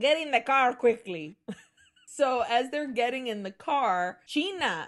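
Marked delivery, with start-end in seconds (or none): 0.0-1.4 put-on heavy Latin American Spanish accent. Retelling a zombie story, quoting a man's line in a thick Spanish accent. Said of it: "it's a thick Spanish accent".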